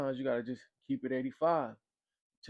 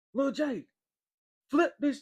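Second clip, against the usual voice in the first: very high, raised, carrying yell; 13 semitones higher, 6 dB louder than usual. Telling a dorm story, retelling someone yelling across the dorm. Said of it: "somebody is yelling across the dorm like".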